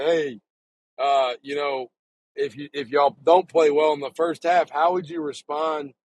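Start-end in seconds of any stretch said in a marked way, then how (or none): none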